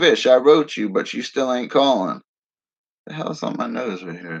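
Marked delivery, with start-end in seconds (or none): none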